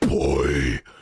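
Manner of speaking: put-on boy said very low and drawn out. Showing how Kratos really sounds, the speaker does a Kratos voice. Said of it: "Kratos sounds like".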